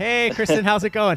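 radio voice. Greeting a guest at the start of the show: radio voice. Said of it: "I like the more radio voice".

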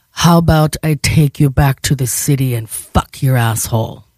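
stone-serious, grave, very serious tone. Retelling what the driver said: imitating a very serious tone. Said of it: "in a very serious tone".

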